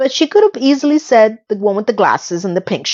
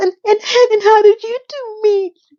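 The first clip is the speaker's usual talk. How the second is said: put-on drunken sobbing, very high and stammering; 12 semitones higher than usual. Retelling a scene where Charlotte asks the couple how they met: imitating Charlotte crying drunk. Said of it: "Literally crying like that with the alcohol in her hand".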